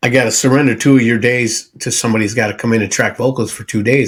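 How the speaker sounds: usual speaking voice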